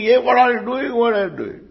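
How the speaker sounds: high-pitched put-on shout.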